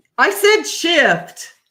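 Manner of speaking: very loud, high-pitched shout. Defending a word just said to another speaker: yelling. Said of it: "Why are you yelling at me?".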